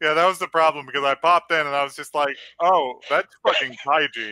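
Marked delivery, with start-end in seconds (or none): none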